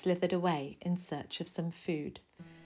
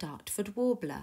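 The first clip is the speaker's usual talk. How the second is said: ordinary delivery, nothing marked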